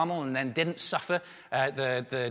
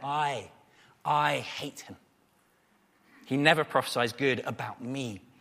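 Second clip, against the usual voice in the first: dripping disdain, contemptuous and scornful reading; 2 semitones lower than usual. Reading the king's words aloud from the passage, contemptuous. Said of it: "You can hear the contempt there".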